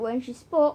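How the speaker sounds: usual speaking voice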